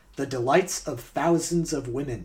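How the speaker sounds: ordinary delivery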